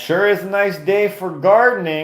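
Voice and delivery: put-on child's voice, very high-pitched, sounding like an old man. Retelling how a seven-year-old talked like a grandpa: imitating a kid talking like a grandpa. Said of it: "he would talk like he was a grandpa".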